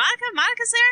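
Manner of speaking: put-on, very high, excited gushing blurt. Speaker explains who Monica is, quoting someone on a headset; imitating Donna getting real excited. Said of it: "Donna gets like real excited".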